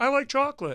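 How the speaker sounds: very high, loud, strange put-on voice. Speaker retelling how a man's partner used to talk, weird voice. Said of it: "used to do a weird voice".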